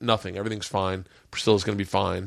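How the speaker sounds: normal talking voice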